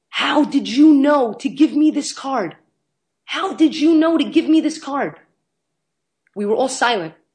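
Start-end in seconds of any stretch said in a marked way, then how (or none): 0.1-5.2 put-on, high, shrill full-on scream, repeated twice. Recounting a man grasping his kindness card, imitating him screaming. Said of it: "he starts screaming".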